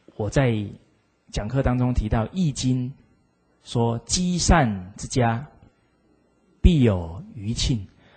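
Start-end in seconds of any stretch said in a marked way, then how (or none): none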